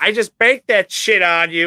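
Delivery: high nerdy voice. Describing a guy who beats athletic dudes at basketball, quoting his trash talk: nerdy voice. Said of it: "he talks like a nerd".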